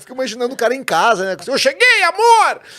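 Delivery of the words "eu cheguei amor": very high, louder, projected drill-sergeant style voice. Imagining the sergeant arriving home, in a projected sergeant voice. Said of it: "é sempre no, na, no, no impostação".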